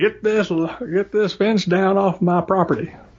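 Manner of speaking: put-on drawling Southern US accent. Quoting a woman's hypothetical demand to remove a fence, in a Southern US accent. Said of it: "that's the accent I guess I fall into naturally from my Southern heritage".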